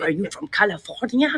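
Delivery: English spoken with a put-on French accent. Retelling talking to an American woman, in a put-on French accent. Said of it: "I just started a French accent".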